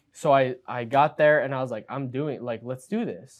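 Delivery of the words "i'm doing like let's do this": normal talking voice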